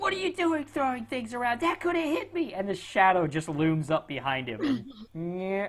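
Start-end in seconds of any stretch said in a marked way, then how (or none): 0.0-2.5 very high, shrill, squealing goblin yell. Voicing a goblin shouting at his buddy during a fight: shouting goblin. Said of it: "he's shouting at his buddy".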